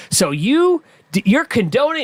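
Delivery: put-on berating tone. Retelling a congressional hearing questioning: imitating a berating congressman. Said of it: "berating one of the guys".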